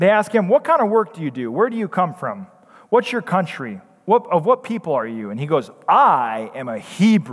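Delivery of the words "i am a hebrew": arrogant, very slow and deliberate. Speaker retelling a bible verse, acting out the answer in a mock-arrogant tone. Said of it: "Can't you just hear the arrogance in his voice?".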